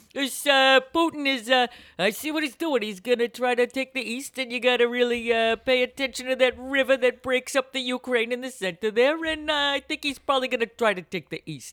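high, matter-of-fact cartoon bear voice. Imitating your father breaking down history for you, in his Yogi Bear voice. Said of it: "That's my father's voice".

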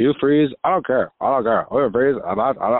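mocking, flat robotic put-on voice. Mocking a sick podcaster's voice in a voicemail: imitating Stucky's robot-like voice. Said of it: "that's what you sound like. You sound like a damn robot".

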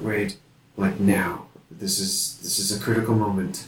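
whispering, hushed voice. In a role-play game, a player's character speaks to Wade at a critical moment, whispering. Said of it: "I just kind of whispered".

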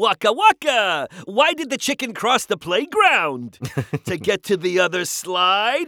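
high, sing-song tune. A voice actor lists Disney roles, then demonstrates one: Baby Fozzie voice. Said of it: "I've done Baby Fozzie".

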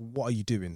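ordinary delivery

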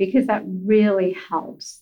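ordinary delivery

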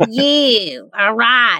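Southern accent, drawling thank you, drawn-out you. Thanking a guest at the end of a talk: Southern accent. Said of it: "I'm talking Southern".

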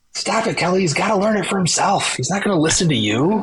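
screamed outburst, letting it all out. Retelling screaming at oneself in the car: imitating own past scream. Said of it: "I was in the car and I just screamed".

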